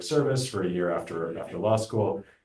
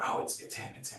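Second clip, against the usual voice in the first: hushed, breathy, barely voiced whisper. Retelling how people reacted to a visiting scientist: imitating a whisper. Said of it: "people would whisper".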